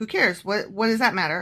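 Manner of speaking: plain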